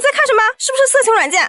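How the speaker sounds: very high, rapid, rattled-off barked shouting. Retelling how dad burst out at the speaker on their phone, imitating a shout. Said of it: "我爸突然蹦出来大喊".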